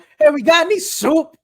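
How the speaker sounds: very high, shrill, booming, very loud yell. Voicing a store employee calling back to the grill cook: yelling back to the grill cook. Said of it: "yells back to the dude on the grill".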